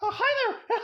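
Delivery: very high, little cartoon voice. Showing off voices they can do, Mickey Mouse voice. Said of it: "Or I can do Mickey Mouse".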